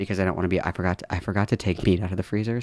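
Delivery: very quiet, hushed, soft-spoken voice. Telling listeners he has to step away for a minute; speaking very quietly. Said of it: "I need to say this like really quietly".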